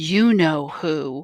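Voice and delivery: imitated whisper. Retelling what a father said a month before he died: imitating a whisper. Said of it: "And he whispers".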